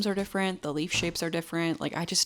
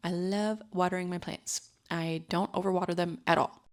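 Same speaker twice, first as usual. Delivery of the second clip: ordinary delivery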